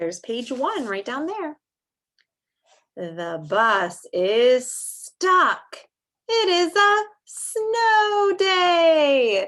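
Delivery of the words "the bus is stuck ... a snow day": very high-pitched, very slow, happy excitement. Reading a story aloud to listeners, the speaker uses an excited voice. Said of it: "you might have heard my excitement in my voice".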